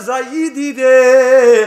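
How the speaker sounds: long, loud, drawn-out scream.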